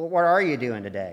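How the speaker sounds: put-on puppet voice, south-side Pittsburgh accent. Talking with his partner, a character speaks in a south-side Pittsburgh Muppet voice. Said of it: "you got me sound like some Muppet from the south side of Pittsburgh".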